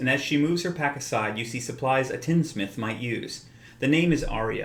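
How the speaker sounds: ordinary talk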